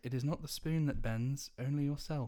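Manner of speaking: best-effort put-on English accent. Retelling what a spoon-bending child says, in an English accent. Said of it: "In the best English accent possible".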